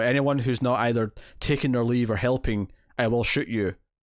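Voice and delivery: normal talking voice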